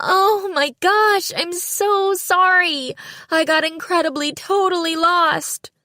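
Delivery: very high, slow, shrill screech. A woman answers from her car after Nisa shouts at her; high-pitched screeching woman's voice. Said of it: "a woman's high-pitched voice screeched".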